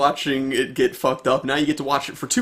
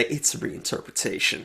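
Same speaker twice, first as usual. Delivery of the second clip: mocking parody, breathy hushed whisper; 3 semitones lower, 8 dB quieter than usual. Quoting a director's line to make fun of him: mocking Spike Lee. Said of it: "mockingly say".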